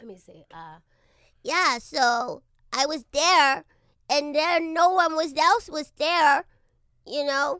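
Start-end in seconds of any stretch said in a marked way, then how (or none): 1.4-7.6 put-on cartoon boy voice, much higher and louder. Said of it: "Let me see if I still have it".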